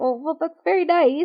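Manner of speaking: high, nervous, confused, polite voice. Retelling a character's reply to an advance: imitating someone nervous. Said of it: "he's very nervous".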